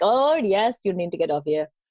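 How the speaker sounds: clumsy, terrible, put-on Indian accent. Retelling people's answer about where to get off the train, in a terrible indian accent. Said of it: "That was a terrible attempt at the accent".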